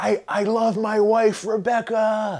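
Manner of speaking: syrupy, corny movie-hero voice, very high and slow. Mocking a corny nineties film guy twirling in the rain: imitating a corny syrupy movie hero. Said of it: "And he's like".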